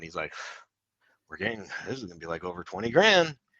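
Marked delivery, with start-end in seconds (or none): 1.3-3.3 put-on mumble, words half-swallowed. Recounting what a guy kept saying while tagging trees, imitating someone mumbling. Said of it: "he's just kind of mumbling this".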